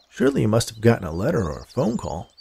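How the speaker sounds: ordinary delivery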